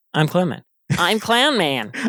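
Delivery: put-on high, annoying little-kid voice. Recapping a game episode's scores, a host does Clown Man voice. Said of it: "Clown Man has an annoying uh, child voice".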